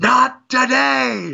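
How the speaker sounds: mock rough, very high, all-out, top-of-the-lungs yell. Describing a player stopping their buddy's run from the base, retelling a top-of-lungs yell. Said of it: "just at the top of his lungs just yells".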